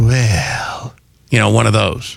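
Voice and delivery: breathy voice. Suggesting a voice for their chatbot, demonstrating a breathy voice. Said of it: "I think it should have a very breathy".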